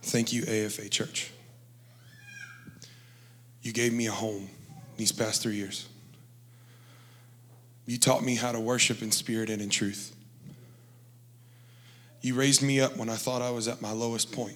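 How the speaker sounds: choked-up, near tears, swooping pitch. Thanking the church for three years as a home: on the verge of tears. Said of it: "sorry, I'm gonna cry".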